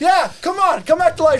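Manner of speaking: high-pitched, loud, mock-excited shouting.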